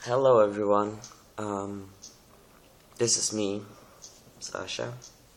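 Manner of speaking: drowsy, freshly awake voice. Sasha greets everyone right after waking up, just woke up. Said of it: "I just woke up".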